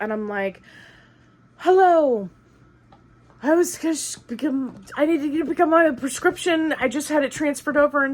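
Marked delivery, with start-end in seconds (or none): 1.6-8.0 play-acted breathless, pitched-up words between pants. Retelling reaching a pharmacy counter after running, retelling being out of breath. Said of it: "I'm like completely out of breath".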